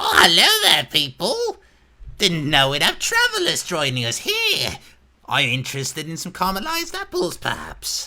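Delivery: very high, loud, sing-song goblin voice. Voicing a goblin in carnival clothes offering caramelized apples: goblin voice. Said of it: "there's this goblin ... He's like".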